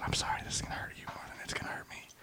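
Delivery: very quiet, barely voiced whisper. Retelling giving a syringe shot to an eight-year-old boy: retelling a whisper. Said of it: "and I whispered to him".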